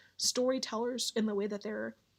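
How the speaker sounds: plain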